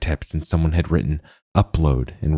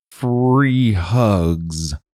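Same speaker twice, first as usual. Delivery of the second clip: put-on slurred robot voice, much higher; 5 semitones higher than usual. Narrator reads the malfunctioning Hugbot's last words, slurring dying Hugbot voice. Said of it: "it slurred as its light dimmed".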